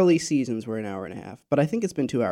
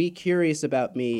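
normal talking voice

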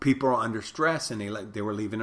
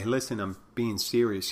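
plain

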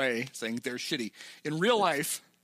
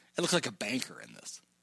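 thoroughly repulsed, disgusted voice; 3 semitones lower, 3 dB quieter than usual. Retelling a movie character's remark to another character: imitating Ricky's disgust. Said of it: "he very disgustingly says".

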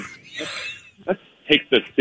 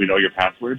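ordinary delivery

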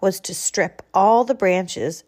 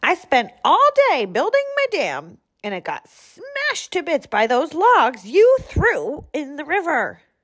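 furious, high, swooping, snarling beaver voice; 8 semitones higher than usual. Reading a story, the angry beaver on the doorstep speaks, snarling angry beaver. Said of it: "it snarled".

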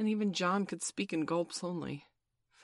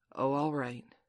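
ordinary delivery, nothing marked

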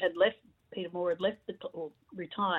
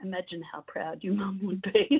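put-on, gentle, persuasive man's voice. Recall what Peter said to you months after your mum died, imitating Peter's persuasive, gentle voice. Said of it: "in this sort of really sort of persuasive, gentle voice".

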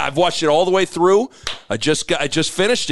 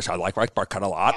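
mock chompy voice, much lower, quieter; 8 semitones lower, 6 dB quieter than usual. Hosts imitate the way a man says a line, chompy imitation of his delivery. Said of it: "It's very chompy".

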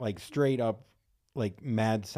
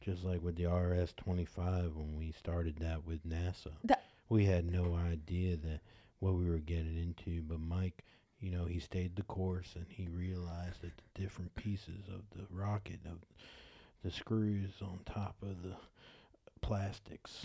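put-on flat monotone, lower and quieter; 4 semitones lower, 8 dB quieter than usual. Making fun of the other long speeches, imitating monotone speech.

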